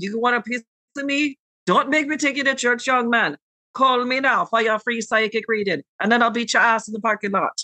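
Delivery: put-on fast, high, rattled-off Jamaican accent. Retelling how alcohol brought out an impression you were trying not to make, Miss Cleo impression. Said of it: "but that accent was killer".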